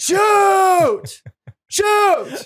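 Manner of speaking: put-on high, loud yell in a toddler voice.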